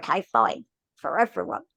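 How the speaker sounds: sulky, grumpy, reluctant and grudging tone. Retelling your own thought on a day you were grumpy: grumpy, re-enacting own past thought. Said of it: "I was obviously having a grumpy day and I thought".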